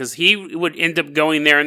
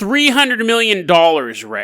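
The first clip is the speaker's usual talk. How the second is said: plain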